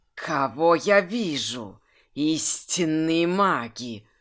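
sibilant hissing snake voice, drawn-out вижу. Reading a story, the narrator voices the snake creature, hissing. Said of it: "прошипел змеинок".

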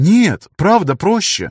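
worked up, insisting. A woman answers a man who scoffed at her claim, getting heated. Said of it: "загорячилась Лиола".

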